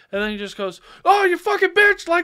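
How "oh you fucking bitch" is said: mock very high, very loud, shrill, screaming angry freak-out. Telling a story, acting out a man freaking out at a woman. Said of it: "he freaks out on her".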